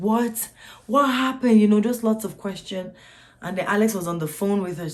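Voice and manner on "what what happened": put-on high, loud scream in shocked disbelief. Recalling hearing news of a death by phone, retelling screaming in shock.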